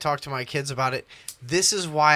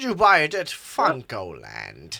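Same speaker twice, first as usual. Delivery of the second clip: put-on old man voice. Asking another speaker where they bought a game: put-on old man voice. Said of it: "Why'd you start talking like that for a second?".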